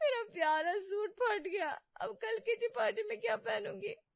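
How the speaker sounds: very high, wailing, tearful weeping. Acting a wife whose favourite suit tore, crying. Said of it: "तुम रो क्यों रही हो?".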